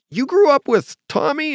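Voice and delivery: mock, very high, shouted voice. Retelling being greeted on walking into a house: imitating someone shouting. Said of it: "he starts shouting".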